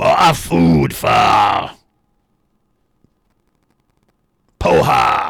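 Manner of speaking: rough, furious creature voice shouting. Game narrator voices a really pissed creature shouting out; angry creature shout. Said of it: "seems really pissed and he shouts out".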